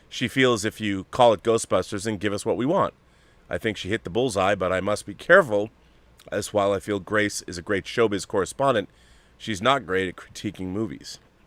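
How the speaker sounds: ordinary delivery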